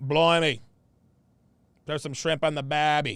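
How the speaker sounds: bad put-on Australian accent, low pitched. Joking about a good-looking man from down under: australian accent. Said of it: "That's my best Australian accent".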